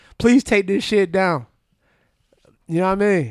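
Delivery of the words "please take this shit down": put-on crying plea, higher. Retelling a mother begging for a video to come down, imitating crying, pleading. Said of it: "she's crying, pleading".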